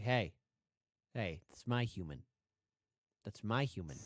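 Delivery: very low, deep-voiced elephant voice. Commenting on a clip, voicing the elephant protecting a person: voicing the elephant. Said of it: "The elephant's like".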